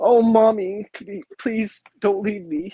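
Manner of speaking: put-on very high, squeaky, whiny, pleading baby voice. Imagining an actor cast as a baby, pleading: Josh Brolin as a whiny baby. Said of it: "could you imagine him just being like".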